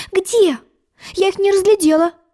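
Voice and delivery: high, innocent, guileless, naive tone. Narrator voicing a girl answering a mocking sheep from the boat, naive. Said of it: "Наивно сказала Алиса".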